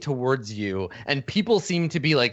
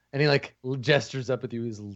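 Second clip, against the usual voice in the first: ordinary talk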